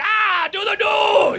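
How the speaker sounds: high-pitched yell, dragged out long. Joking about Hitler in a bunker: bad Hitler impression. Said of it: "That's not a great impression".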